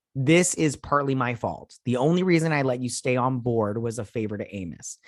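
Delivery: ordinary delivery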